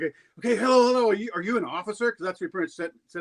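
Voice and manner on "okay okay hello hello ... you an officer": put-on panicky, overplayed, frantic scramble of words. Retelling a call with a man claiming to be Canada's legal department, acting frantic. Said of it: "I was real frantic".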